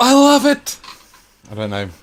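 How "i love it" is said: very high, loud, enthusiastic gushing. Doing an unpractised off-the-cuff impression: Jim Carrey impression. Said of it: "Imagine my best Jim Carrey impression".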